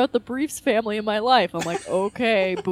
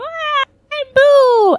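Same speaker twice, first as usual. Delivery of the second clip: put-on loud, very high, dumb-sounding baby voice; 7 dB louder than usual. Describing how Boo speaks in this episode, Boo dumb baby voice. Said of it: "how Boo is speaking like a dumb baby voice. He's like".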